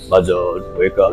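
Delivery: low, soft, really deep voice.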